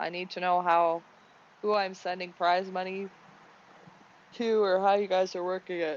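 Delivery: talking through a yawn. Host reading race results, asking where to send prize money, yawning. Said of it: "Sorry, I'm yawning".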